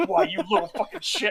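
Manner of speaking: seething, huffing outburst. Retelling a scene, imitating Odo huffing and seething after getting up. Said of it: "he's literally huffing and puffing and seething".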